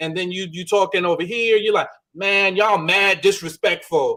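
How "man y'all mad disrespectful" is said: casual, slow, slangy code-switched register. Imitating a reality show cast member who code switches: imitating someone code switching. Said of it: "you talking like this, you code switching".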